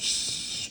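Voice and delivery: stern, whispered shush. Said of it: "in a very stern way".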